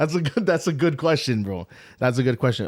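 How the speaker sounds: words broken up by laughing. Speaker reacting to a question about Brother Jeffrey, laughing while talking. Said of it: "Sorry, I'm laughing".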